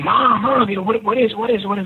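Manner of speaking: mock high-pitched yelling. Retelling calling to mom over a loud engine noise: retelling own yell. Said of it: "and so I start yelling".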